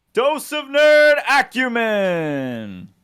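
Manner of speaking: high, slow arena announcer voice with reverb.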